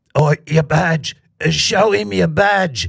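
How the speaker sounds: put-on, mild, hollered call. Telling a story, the speaker voices a man shouting to a cop chased by a bull: retelling a full-voice shout. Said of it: "shouted at the top of his voice".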